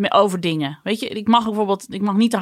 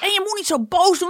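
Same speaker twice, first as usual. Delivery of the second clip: put-on, very high shouting; 11 semitones higher than usual. Retelling what a young daughter said: imitating a child shouting. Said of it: "Dan staat ze tegen me te schreeuwen".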